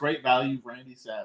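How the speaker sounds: ordinary talk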